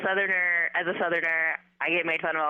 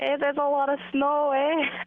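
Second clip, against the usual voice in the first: Minnesota accent, high-pitched; 9 semitones higher than usual. Host asks a guest for a minnesota accent and tries one: minnesota accent. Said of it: "Let's hear you try it".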